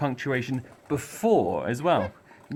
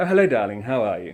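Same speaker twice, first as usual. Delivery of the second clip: polite, courteous, charming voice; 6 dB louder than usual. Demonstrating how the way a character speaks shows personality: polite, charming voice. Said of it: "a bit more of a polite, maybe charming person".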